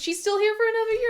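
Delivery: high, fast, mock-shocked tone.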